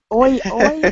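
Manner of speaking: loud, mock Cockney accent.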